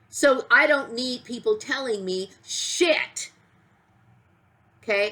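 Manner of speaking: very angry. Speaker venting to get it off their chest: very angry. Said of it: "I'm very angry".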